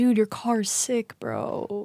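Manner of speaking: soft, hyped-up macho bro voice. Speaker acting out a guy praising a friend, in a Chad voice. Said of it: "I'm doing my Chad voice".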